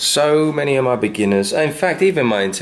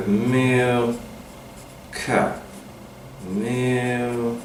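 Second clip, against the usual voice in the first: silly word stretched over two beats, much quieter; 6 dB quieter than usual. Demonstrating how to say a word in a really silly, drawn-out way. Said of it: "I say it in a really silly way".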